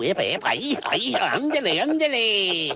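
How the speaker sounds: very slow, stretched, high sing-song swooping voice. Voicing the cartoon character being discussed: Speedy Gonzales voice. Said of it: "Speedy Gonzales".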